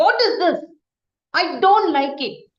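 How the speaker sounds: loud, openly angry outburst. Demonstrating to a group how speaking when angry sounds, with volume taken up. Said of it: "take your volume up".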